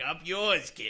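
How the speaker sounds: put-on very loud, wicked, strong Boston accent. Describing a favorite person to interact with, imitating Tommy's Boston accent. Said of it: "He has a wicked Boston accent".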